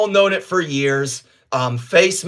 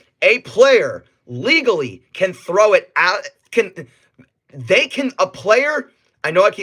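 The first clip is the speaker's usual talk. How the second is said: stuttering, stammering, restarting and tripping over words; 3 semitones higher than usual. Explaining a rule to listeners, stuttering over the words. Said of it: "sorry I'm stuttering".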